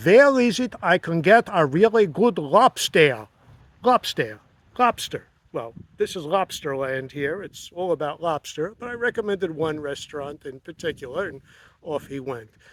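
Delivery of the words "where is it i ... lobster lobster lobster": put-on Israeli-accented voice. Speaker recounting what a guest asked at check-in, imitating Mordecai's Israeli accent. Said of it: "with his Israeli accent, which I will now try to impersonate".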